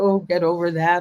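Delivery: ordinary delivery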